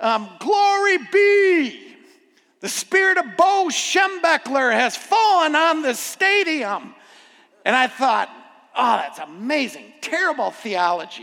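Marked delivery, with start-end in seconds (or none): 0.0-6.9 acted, full-throated, booming, drawn-out, high bellow. Retelling a man in the stadium crowd who stood up, retelling a bellowed shout. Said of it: "he just bellowed out".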